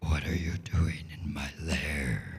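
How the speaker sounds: very low, growling, rumbling dragon voice. Voicing a dragon to the players in its lair: rumbling dragon voice. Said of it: "The dragon rumbles".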